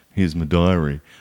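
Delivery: words mumbled, barely articulated, indistinct. Retelling handing over their diary to be scanned, mumbled. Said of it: "went like mumbling".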